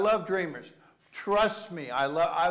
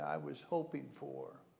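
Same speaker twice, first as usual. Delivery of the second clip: mock disappointed, flustered child voice, quieter; 2 semitones lower, 12 dB quieter than usual. Acting out a child who opens a sweater on Christmas: imitating a child's disappointed, flustered voice. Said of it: "their little flustered voice as they say".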